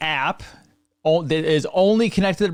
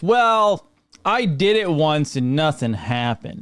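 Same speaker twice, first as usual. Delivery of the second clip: put-on New York accent, heavy with sarcasm. Acting out what people often say about a pet cleanse: mock-sarcastic New York voice. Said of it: "I'm putting in my New York sarcasm in the voice".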